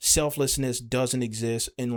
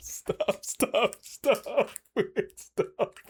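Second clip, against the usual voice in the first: talking through laughter, higher pitch; 10 semitones higher than usual. Trying to speak after a word mix-up, laughing while talking. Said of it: "I'm sorry, I'm actually laughing".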